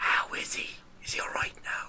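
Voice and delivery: hushed, half-whispered, secretive voice. Retelling how a man pointed at Gary and asked a question, whispering. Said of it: "like a bit of a whisper".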